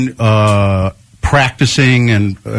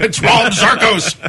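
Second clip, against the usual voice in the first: put-on old sci-fi movie villain voice. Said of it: "sound kind of like a villain of an old science science fiction movie".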